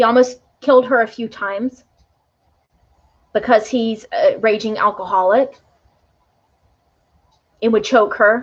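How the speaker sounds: choked-up emotional voice. Telling another reader's client's story of abuse, getting emotional. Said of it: "I'm getting emotional".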